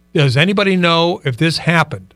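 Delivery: ordinary talk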